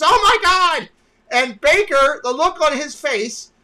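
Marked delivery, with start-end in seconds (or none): 0.0-0.9 shrieked, piercing, high, loud scream. Retelling how a cast member reacted to a scooter through the photo: imitating a scream. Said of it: "The cast member screams".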